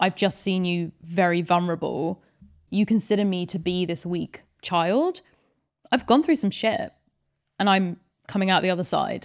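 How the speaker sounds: ordinary talk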